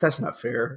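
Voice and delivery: quiet, soft voice. Retelling how he answered a question in a clip from his season, quietly. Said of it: "he just like quietly goes".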